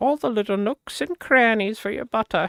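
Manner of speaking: put-on high-pitched old English lady voice. The speaker performs a line in an old English woman voice. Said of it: "Some like old English woman".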